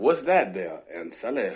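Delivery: loud, big, swooping cartoon rooster voice, Southern. During a recording, asking Aunt Sally a question: Foghorn Leghorn voice. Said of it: "It's my Foghorn Leghorn".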